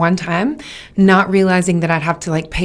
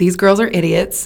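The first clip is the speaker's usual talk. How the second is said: plain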